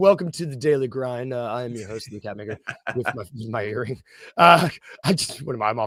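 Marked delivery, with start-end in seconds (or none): 0.0-4.0 low, sultry put-on host voice. Pretending to host the show wearing a giant earring: put-on sultry voice. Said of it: "sultry voice all of a sudden".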